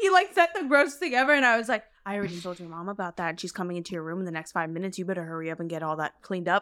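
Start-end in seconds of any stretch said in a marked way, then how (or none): 2.1-6.6 acted, menacing, low, hushed sinister voice. Retelling your reply to someone's gross joke, in a mock-sinister voice. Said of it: "like in a really sinister voice".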